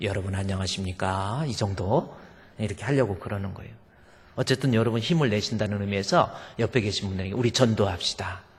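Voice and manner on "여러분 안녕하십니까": toned-down, low, soft voice around do-re pitch. After an elder raised the tone, greeting everyone in a lower pitched tone. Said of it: "저는 좀 톤을 낮춰서 도레 정도".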